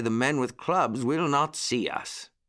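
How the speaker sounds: usual speaking voice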